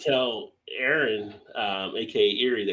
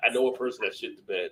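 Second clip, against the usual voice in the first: ordinary talk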